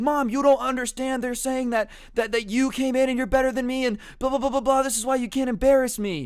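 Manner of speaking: mock frustrated, upset, high yelling. Retelling how Brandon answers his mom telling him to stop: retelling Brandon yelling. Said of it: "Stop yelling".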